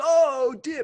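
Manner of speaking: squeaky, very high, very loud blurt. Retelling how Simba reacted during the other speaker's Mufasa bit: Jason Mendoza voice. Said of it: "that was totally Jason Mendoza".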